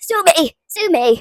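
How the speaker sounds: excitable, energetic speech. Brushing off a remark about religion after a hot run: hyper. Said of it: "hyper today".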